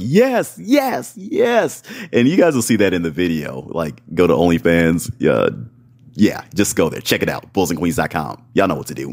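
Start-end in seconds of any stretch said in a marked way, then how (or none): 0.0-1.8 very high screaming between pants. Describing how vocal a partner is, imitating a woman screaming yes. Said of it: "she's screaming, she's panting".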